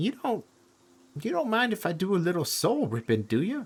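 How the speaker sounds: very high squeaky character voice, big pitch swoops. Voicing Mock, who asks the players about soul ripping: voicing Mock. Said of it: "Mock looks at you guys and he goes".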